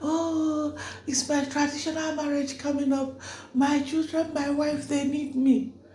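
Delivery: acted, very high, frantic, desperate, panicked pleading scream. Acting out a driver screaming while the speaker kept recording: retelling someone screaming. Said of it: "So he was screaming like".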